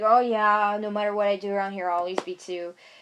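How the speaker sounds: cutting, sarcastic delivery. Retelling what was said to dad: retelling a sarcastic remark. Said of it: "I was just being sarcastic".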